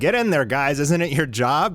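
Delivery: ordinary delivery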